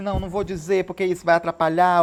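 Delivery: ordinary talk, nothing marked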